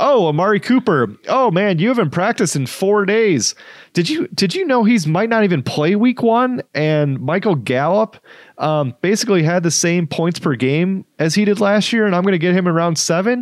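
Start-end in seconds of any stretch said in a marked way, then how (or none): 0.0-6.6 high, super sarcastic needling with sarcastic concern. Showing how to taunt a fantasy football rival: mock sarcastic praise. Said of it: "you can be super sarcastic".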